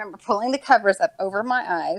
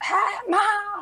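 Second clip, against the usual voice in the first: mock shrill, carrying holler, very high and loud; 11 semitones higher than usual. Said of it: "my sister's loud".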